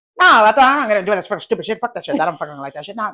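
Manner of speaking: mock heated mumble, fired-up, words running together. Retelling a man getting fired up and mumbling, mock fired-up mumbling. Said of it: "he starts getting very fired up and he starts mumbling his words".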